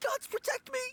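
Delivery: freaking out. Frightened game character being approached by strangers, freaking out. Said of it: "Stop freaking out and stand still".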